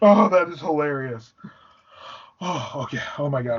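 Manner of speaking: words broken up by laughter. Reacting to a friend's funny voice bit, laughing while talking. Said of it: "I gotta stop laughing".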